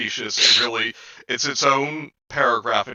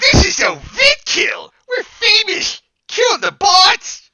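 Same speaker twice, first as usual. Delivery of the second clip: very high, loud, drawn-out put-on nerd voice; 8 dB louder than usual. Voicing the character Addison with a better voice: put-on nerd voice for Addison. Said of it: "I have a better voice for this one".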